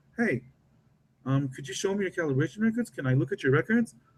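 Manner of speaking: openly curious, inquisitive tone. Demonstrating an inspector asking for calibration records, in a curious tone. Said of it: "I'm showing curiosity".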